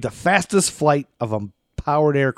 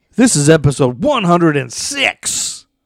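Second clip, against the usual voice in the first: loud yelling and hollering; 3 semitones higher, 6 dB louder than usual. Host announcing the episode number, yelling. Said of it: "Can you stop yelling?".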